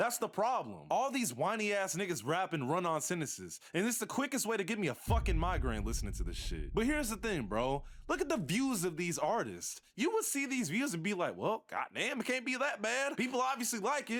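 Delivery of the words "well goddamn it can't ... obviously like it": put-on country accent, pitched higher. Imitating a viewer reacting to the views: country accent. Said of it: "I just did a country accent".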